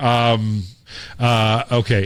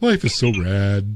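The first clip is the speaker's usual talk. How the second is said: put-on sad delivery; 3 semitones lower than usual. Recalling his old high school saying for when things went wrong: mock-sad. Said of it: "It's just sad way".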